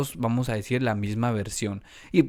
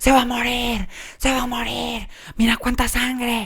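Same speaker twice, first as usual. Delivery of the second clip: put-on very high, frantic, panicked yelling and screaming; 11 semitones higher, 3 dB louder than usual. Retelling how the brother screamed in shock over the blood: imitating brother screaming in panic. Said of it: "me empezaba a gritar y me decía".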